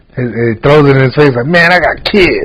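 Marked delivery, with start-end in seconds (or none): 1.5-2.5 play-acted fed-up, slow, pissed-off voice. Retelling a sketch where a tipped attendant throws money back: imitating a pissed-off man. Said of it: "all pissed off".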